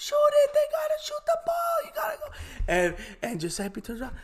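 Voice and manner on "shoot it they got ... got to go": very high, loud, hard yell. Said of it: "And she's yelling".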